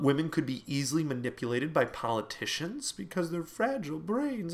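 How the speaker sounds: tongue-in-cheek, facetious, mock-serious solemn tone. Listing old reasons given against women voting, facetious. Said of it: "that's me being very facetious".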